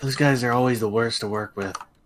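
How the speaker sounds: quiet whispering. Speaking in character near guards on a wall: whispering. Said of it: "I whisper".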